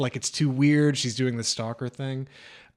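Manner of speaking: normal talking voice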